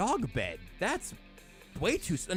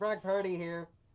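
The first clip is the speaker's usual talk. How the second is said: robotic put-on voice; 3 semitones higher than usual. Joking that bad mics distort the players' voices: robotic Brock Purdy voice. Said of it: "You sound kind of like a robot".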